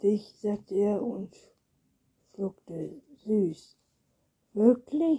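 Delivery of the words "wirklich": high-pitched, loud, eager, called-out exclamation. She replies to Anton right after he answers her question; called out. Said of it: "rief sie".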